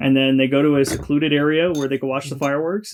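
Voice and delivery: ordinary talk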